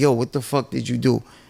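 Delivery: put-on disappointed voice. Retelling how the adoptive father confronted him: imitating a disappointed father. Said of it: "with disappointment in his eyes".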